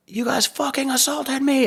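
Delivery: mock very high, enraged, furious screaming fit. Telling someone about a man caught stealing flipping out at security, retelling a man's scream. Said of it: "like he's screaming".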